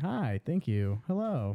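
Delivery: slow, mechanical, robot-like politician voice. Retelling a scene from Parks and Recreation, imitating a robotic politician. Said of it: "the politician he works for literally is like a robot".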